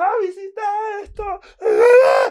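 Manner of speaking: acted very high, very loud, slow, drawn-out sobbing wail. Retelling how a guy reacted to his girlfriend's confession: imitating someone crying. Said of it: "se pone a llorar así".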